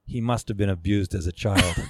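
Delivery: mock dead-serious, deadpan delivery. Retelling what a woman in the gallery said to the artist, retelling a deadpan remark. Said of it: "dead serious with a deadpan face".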